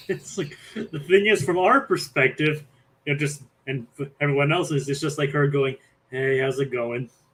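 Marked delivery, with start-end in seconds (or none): 6.1-7.1 mock, put-on bored tone. Retelling how her greeting sounds from everyone else's perspective: imitating a bored greeting. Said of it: "bored out of her".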